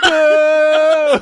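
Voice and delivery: very high, loud, long, drawn-out enthusiastic boo. Joking about what the heckler meant: imitating a loud boo. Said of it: "but it came out".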